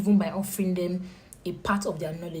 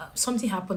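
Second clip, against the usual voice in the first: plain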